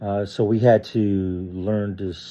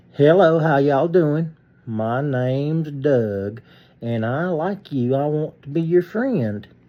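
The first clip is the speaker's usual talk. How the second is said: put-on pitched-up Southern drawl in a childlike voice; 5 semitones higher than usual. Speaker demonstrates how he talked as a kid, childhood Southern accent. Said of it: "I used to talk like this when I was a kid".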